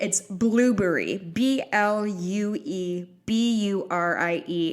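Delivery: spelled out very slowly, letter by letter. Podcast host spelling out their Twitter handle, saying it very slow. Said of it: "I'm going to say it real slow".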